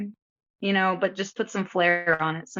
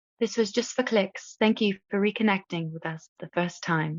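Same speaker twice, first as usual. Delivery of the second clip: put-on English accent. Retelling a joke line they once said on a show: English accent. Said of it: "like with an English accent once where I was like".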